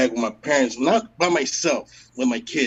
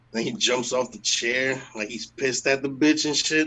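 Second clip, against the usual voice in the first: plain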